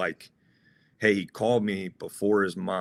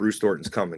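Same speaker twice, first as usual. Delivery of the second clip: ordinary talk, nothing marked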